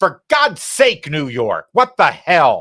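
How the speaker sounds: very loud, high, drawn-out, swooping yell. Reading out the ballot's party lines and addressing New York: yelling. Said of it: "I'll stop yelling at you".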